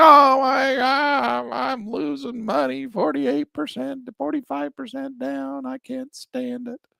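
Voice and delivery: put-on high whine. Retelling own reaction to a falling stock: mock whining about losses. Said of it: "That's why I'm crying the blues".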